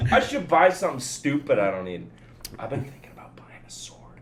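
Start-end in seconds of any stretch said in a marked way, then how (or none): 2.6-4.2 plain whisper, voice dropped to breath. Talking while the fiancée is in the other room: whispering. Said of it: "I'm whispering because the fiance's in the other room".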